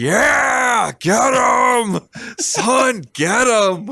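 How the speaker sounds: mock very high, very slow, drawn-out cheering shout. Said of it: "fucking shouting out".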